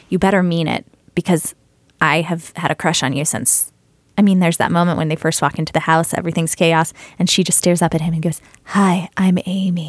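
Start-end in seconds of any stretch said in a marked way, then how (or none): 8.6-9.9 put-on love-struck voice, much slower. Quoting the movie moment a character first meets him, imitating love-struck Amy. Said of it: "She's love struck".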